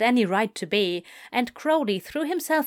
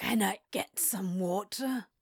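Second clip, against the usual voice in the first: soft, weak, barely formed mumble; 9 dB quieter than usual. Narrator reads a character eventually asking for some water, mumbled. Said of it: "He eventually mumbled".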